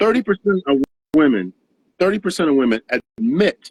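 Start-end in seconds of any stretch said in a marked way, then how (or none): 2.9-3.7 strong punched stress on the word admit. Citing a study about women going on dates: stress on ADMIT. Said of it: "I stress that word admit".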